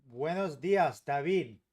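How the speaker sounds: loud Spanish with a strong American accent. Greeting a viewer in Spanish: gringo accent in Spanish. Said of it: "You'd be very impressed with my accent".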